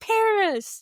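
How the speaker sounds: mock piercing, very high, shrill yell. Retelling a friend calling out to a celebrity: imitating a friend yelling. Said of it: "he yells".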